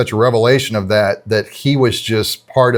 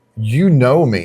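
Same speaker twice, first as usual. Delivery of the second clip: fed-up, exasperated voice, put on. Retelling how Peter answers a third question: imitating exasperation. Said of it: "you can tell he's kind of exasperated".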